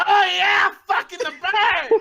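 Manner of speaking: shrill, very high, drawn-out screaming. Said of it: "as I'm screaming this shit".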